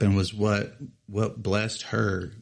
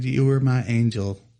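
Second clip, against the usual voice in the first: ordinary talk, nothing marked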